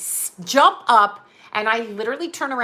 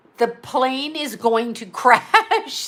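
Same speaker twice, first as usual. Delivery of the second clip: ordinary delivery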